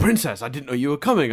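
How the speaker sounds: flustered, blustering, blundering tone. Retelling what the warden says when Azula shows up: imitating the warden blustering. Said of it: "all blunder, all, you know, blustering".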